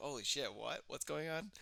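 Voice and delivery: utterly bewildered, baffled, confused tone. Retelling own reaction to a friend's announcement: retelling own confused reaction. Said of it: "I was so confused".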